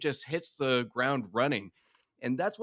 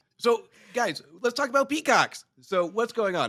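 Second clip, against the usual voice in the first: clumsy Boston accent, very high pitch, loud; 9 semitones higher, 6 dB louder than usual. Host speaks to the group as AI Justin, in a bad Boston accent. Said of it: "your Boston accent needs work there".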